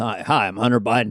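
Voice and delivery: bland, generic ordinary guy voice. Showing how to do a Hunter Biden impression: Hunter Biden impression. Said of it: "just go like this".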